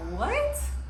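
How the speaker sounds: high, loud, baffled.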